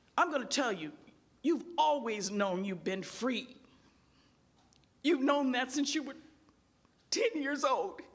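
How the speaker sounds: firm, serious voice. Retelling what Bill once said in class, imitating Bill's stern brotherly voice. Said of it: "with his stern brotherly voice".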